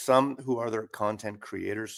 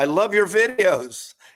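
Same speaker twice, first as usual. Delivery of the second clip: very high, very loud, drawn-out yell from afar; 11 semitones higher, 10 dB louder than usual. Retelling how a passerby in a parking lot yelled from afar: imitating someone yelling. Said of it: "he yells out".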